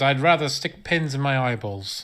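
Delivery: normal talking voice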